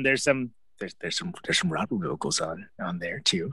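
hushed conspiratorial voice. Pointing out a detail on an album track to others, deeply conspiratorial tone. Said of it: "I was seeing in that deeply conspiratorial tone".

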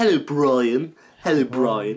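voice with bottom lip pushed slightly out. Tutorial on doing a voice, with jaw and lip tips: Stewie voice. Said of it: "stick your bottom lip out just a little bit just to get that sound that he always does".

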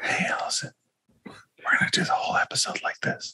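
hushed, very soft, quiet whisper. Joining the group's whispering bit, the speaker addresses Alyson, whispering. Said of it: "we're whispering".

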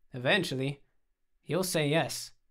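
plain

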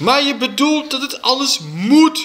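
shrieking yell, pitched very high and shrill. A mother argues back at the teacher, shouted. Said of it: "schreeuwde mijn moeder".

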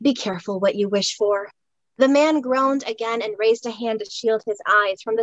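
ordinary delivery, nothing marked

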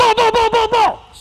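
loud repeated calling out.

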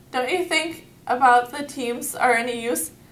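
ordinary delivery

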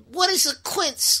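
put-on high woman's voice with Puerto Rican accent. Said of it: "a Puerto Rican".

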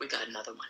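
quiet, secretive half-whisper. Retelling how another man leaned toward a guy, imitating a half-whisper. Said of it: "guy and whispers".

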